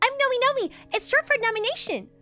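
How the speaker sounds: very high, fast and loud character voice. Playing the character Nomi introducing themselves, high-pitched, quick Nomi voice. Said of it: "Their voice is high-pitched and quick".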